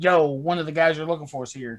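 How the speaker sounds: ordinary talk, nothing marked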